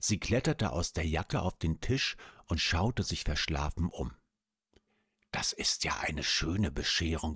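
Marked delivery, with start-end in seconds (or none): 5.3-7.4 soft whisper under the breath. A small spider, just woken, climbs onto the table: whispering. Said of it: "flüsterte sie".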